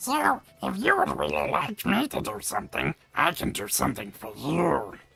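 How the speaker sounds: creepy, creaky, rough, high little goblin voice. Showing a voice-acting job that needed a goblin: goblin voice. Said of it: "they needed kind of, like, a goblin voice".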